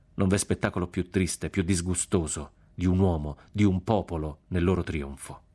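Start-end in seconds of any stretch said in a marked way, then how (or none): none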